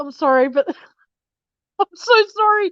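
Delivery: talking through laughter. Apologizing to someone after hurting oneself, laughing while talking. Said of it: "I shouldn't be laughing".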